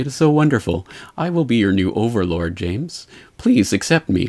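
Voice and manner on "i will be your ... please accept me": put-on, creepy computer voice. Imitating Watson from Jeopardy addressing James: creepy Watson computer voice. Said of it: "the pure voice that he speaks in".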